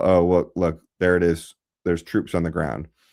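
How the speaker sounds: ordinary delivery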